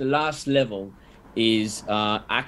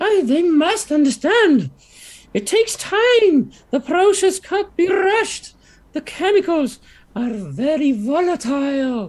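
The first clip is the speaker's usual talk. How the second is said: very high, loud, squeaky character voice; 8 dB louder than usual. Voicing a second overheard speaker answering nervously: squeakier voice. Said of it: "another squeakier voice".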